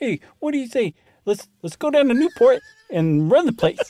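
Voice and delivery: Cleveland accent, pitched a bit high. Host asked how a Cleveland accent sounds, tries a Cleveland accent. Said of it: "That's a Cleveland accent".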